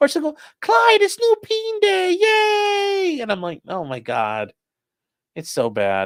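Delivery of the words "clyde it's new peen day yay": very high, slow animal voice, "yay" stretched. Imitating how a woman calls out to him, imitating a pet-talk voice.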